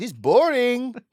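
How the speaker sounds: very high, put-on German accent. Joking about a player moving to the Bundesliga, speaking in a put-on German accent. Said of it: "this is my German accent".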